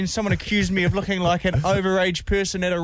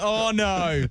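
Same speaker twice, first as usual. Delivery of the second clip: mock faint, disappointed dismay. Teasing the other speaker about their reaction, imitating a faint 'oh, no'. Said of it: "I could hear you in a faint tone going".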